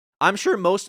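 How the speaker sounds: voice cracking, breaking high mid-phrase. Speaker addressing people in their Discord, voice cracking. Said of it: "voice crack".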